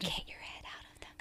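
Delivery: quiet whispering. Teasing the other speaker to get their head out of the gutter: whispering. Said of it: "Why are you whispering?".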